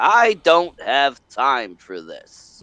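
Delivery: distinguished english gentleman voice. Complaining about how Obi-Wan Kenobi talked in the movie, doing an Obi-Wan Kenobi impression. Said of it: "talked like a distinguished gentleman from England".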